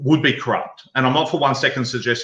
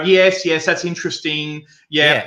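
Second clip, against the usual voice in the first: put-on humouring tone, much higher pitched; 4 semitones higher than usual. Describing a woman on tapes humouring a caller, in a mock-humouring tone. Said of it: "she just sat there humouring him".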